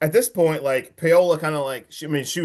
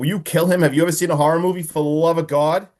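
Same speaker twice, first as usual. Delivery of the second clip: ordinary delivery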